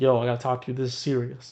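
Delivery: acted, mock-serious, grave tone. Recounting a phone call from a dude while driving, retelling a caller's serious tone. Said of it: "Like that's the tone of voice he had".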